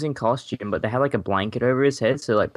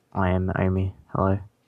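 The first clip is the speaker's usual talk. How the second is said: sensual deep voice, dropped low; 4 semitones lower than usual. Podcast co-host introduces himself to listeners, in a sensual deep voice. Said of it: "with his sensual deep voice".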